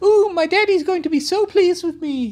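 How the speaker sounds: very high, squeaky, tiny cutesy capybara voice. Retelling a bit someone carried all session: tiny adorable capybara voice. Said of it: "tiny, adorable capybara with a little personality hat going".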